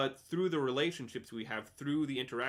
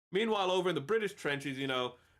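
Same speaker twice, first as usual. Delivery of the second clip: normal talking voice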